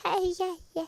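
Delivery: put-on tiny, very high baby talk. Describing how a child being weaned asks for milk, imitating Ford's fake baby voice. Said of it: "he makes this fake baby voice".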